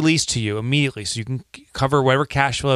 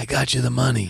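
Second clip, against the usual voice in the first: put-on gangster boss voice, reassuring. Speaker, reading an ad for a lender, gives the website a Godfather voice. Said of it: "there's like this Godfather voice".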